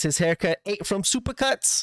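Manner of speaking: horrible put-on Boston accent, pitched high. Recapping events, the speaker quotes an unhappy participant in a horrible boston accent. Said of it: "That was my horrible uh, Boston accent there".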